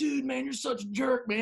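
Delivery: very high, joking, playful fake anger. Retelling how a guy jokingly came up to him, the speaker plays mock-angry. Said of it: "jokingly comes up to me like he was mad".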